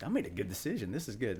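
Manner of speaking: ordinary talk, nothing marked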